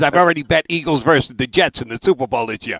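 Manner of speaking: normal talking voice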